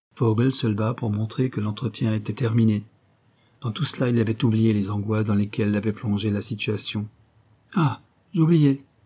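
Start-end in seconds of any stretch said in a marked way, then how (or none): 7.8-8.8 exclaiming, higher pitch. René suddenly remembers something as Vogel ends the meeting, exclaiming. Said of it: "s'exclama René".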